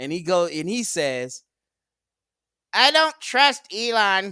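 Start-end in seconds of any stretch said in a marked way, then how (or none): 2.7-4.3 very high, loud put-on comic cartoon voice. Quoting what he says about Elon, in a put-on comic cartoon voice. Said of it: "I gotta put the Slimer voice on, Urkel voice on".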